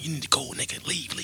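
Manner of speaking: soft, breathy whisper under the breath. Retelling holding a man back from a beating, whispering to him: retelling his own whisper. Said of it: "And then whispering to him".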